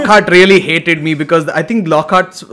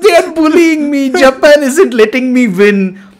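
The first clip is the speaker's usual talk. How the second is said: put-on high small-child voice, blubbering and sobbing; 9 semitones higher, 3 dB louder than usual. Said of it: "I was sobbing like a little kid".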